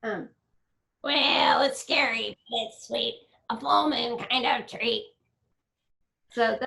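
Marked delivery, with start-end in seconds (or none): 1.6-5.0 put-on villain voice. Showing off a favorite bad guy voice for the listener, bad guy voice. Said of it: "I love doing the bad guy voices. Here, I'll try to do one for you".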